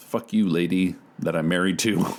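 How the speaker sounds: put-on mutter under the breath. Retelling how David reacts to his wife: David muttering under his breath. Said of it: "kind of muttering under his breath".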